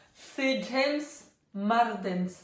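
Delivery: name said in a put-on English accent.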